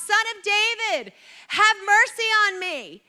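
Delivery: high, loud desperate scream. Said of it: "screams out".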